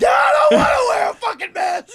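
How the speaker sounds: very high, loud, drawn-out mocking rant. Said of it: "[name]'s Karening out".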